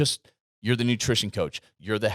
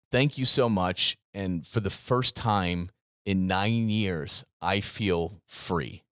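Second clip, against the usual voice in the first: normal talking voice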